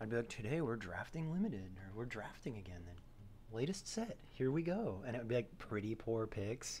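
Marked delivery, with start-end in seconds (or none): 0.3-5.0 weird calm hushed librarian voice, lower and quieter. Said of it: "calm librarian voice".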